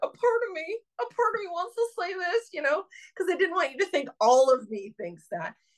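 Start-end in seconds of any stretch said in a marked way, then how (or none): 0.0-2.5 very high, squeaked-out words. Retelling an embarrassing admission to the other speaker, imitating own squeaky voice. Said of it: "I was squeaking out".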